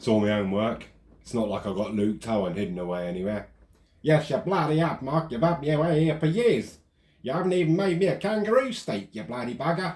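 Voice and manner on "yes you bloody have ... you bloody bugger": squeaky, very high, terrible put-on Australian accent. Joking Luke Towan is hidden away, answering as him: bad Australian accent as Luke Towan. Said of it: "That was the worst Australian accent ever".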